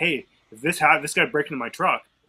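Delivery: ordinary talk, nothing marked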